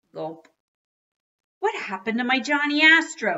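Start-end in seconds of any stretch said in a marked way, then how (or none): 1.6-3.4 very shrill, very high, very loud screech. A father reacting to what happened to his Johnny Astro toy, screeching. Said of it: "He screeched".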